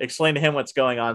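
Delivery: ordinary talk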